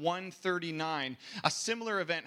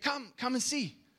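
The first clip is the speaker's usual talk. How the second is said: put-on broken English accent, much higher; 7 semitones higher than usual. Retelling what shopkeepers called out in a Chinatown market, in a broken English accent. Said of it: "in a broken English accent".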